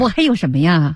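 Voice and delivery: ordinary delivery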